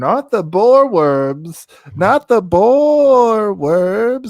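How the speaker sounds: high, loud, drawn-out yell, boar stretched long. Giving a movie its rating, the speaker ends up yelling. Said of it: "You're yelling".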